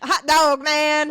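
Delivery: loud, high, put-on Southern drawl. Joking about being good at Southern accents: put-on Southern accent. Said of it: "we're really good at doing Southern accents".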